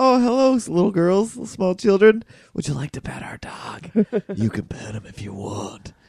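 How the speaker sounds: odd, high, swooping, weird sing-song voice. Retelling how Tara spoke to small children on the street; imitating Tara's weird voice. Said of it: "she used that weird voice when she did it".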